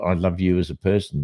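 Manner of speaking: plain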